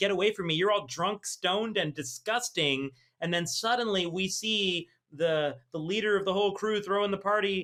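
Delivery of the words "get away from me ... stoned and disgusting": ordinary talk, nothing marked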